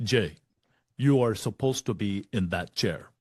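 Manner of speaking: put-on words spoken in a Kenyan accent. Retelling what a man told him, the speaker switches to a Kenyan accent. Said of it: "Now I'm going to use my Kenyan accent".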